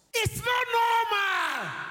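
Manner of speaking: high, loud, slow exclaiming shout.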